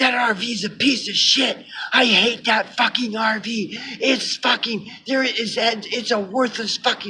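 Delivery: play-acted furious, ranting, angry yelling pitched high. Retelling how she snapped about the RV: imitating someone yelling angrily. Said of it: "She just started yelling".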